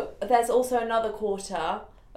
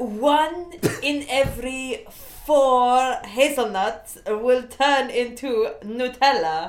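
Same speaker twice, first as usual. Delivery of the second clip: stilted, very slow put-on French accent; 2 semitones higher than usual. Telling a food fact in a parisian chef accent: attempted french accent. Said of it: "The French accent".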